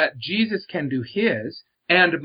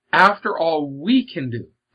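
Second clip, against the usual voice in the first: we punched with heavy stress. Speaker explains how they read a phrase: stress on we. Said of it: "I emphasize the word we".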